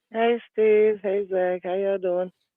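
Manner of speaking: subdued, a little sad, down voice. Caller on a call-in show greeting the two hosts, sounding sad and a little down. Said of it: "you sound a little sad, a little down".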